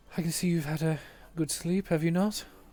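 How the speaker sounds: slightly hushed voice. A character greets a half-asleep companion, in a slightly hushed tone. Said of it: "he's saying this in a slightly hushed tone".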